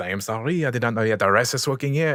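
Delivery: put-on comic French accent. Speaker demonstrates the phrase he uses when doing his silly French accent. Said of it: "if I'm doing that silly French".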